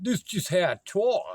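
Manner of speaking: mock street-talk voice.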